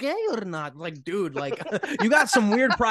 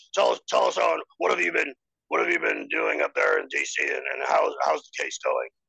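very low, rough host voice. Doing an impression bringing a guest into studio: Alex Jones impression. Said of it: "your Alex impression was just too perfect".

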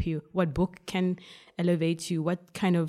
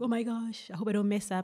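put-on super excited voice, quieter; 4 semitones higher, 5 dB quieter than usual. Recalling the moments before going on stage, imitating own super excited self. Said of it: "I'd be like super excited".

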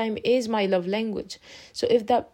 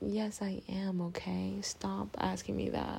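soft, annoyed whisper. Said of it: "And I was like".

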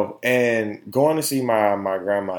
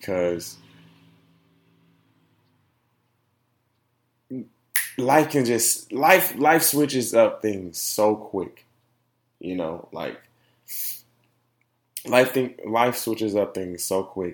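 tearful, weeping while speaking. Talking about his mom's situation, crying while talking. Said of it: "but I'm also crying right now".

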